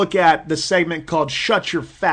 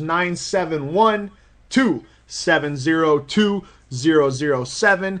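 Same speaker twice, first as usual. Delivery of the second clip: very slow, digits grouped with pauses, chunked rhythm. Repeating a phone number with phone-number rhythm, pauses between digit groups. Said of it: "I even said it with the correct phone number rhythm".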